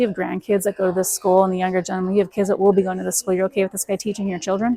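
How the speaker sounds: ordinary talk, nothing marked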